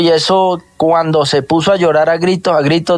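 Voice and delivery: ordinary talk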